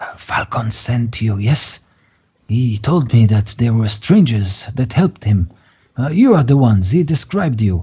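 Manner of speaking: hushed whisper. Narrator voices a man at the inn speaking to the players, whispering. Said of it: "he whispers".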